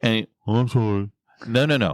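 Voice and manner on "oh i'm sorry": halfhearted, grudging, insincere put-on tone. Retelling being made to apologize as a child: imitating an insincere apology. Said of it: "Like you mean it".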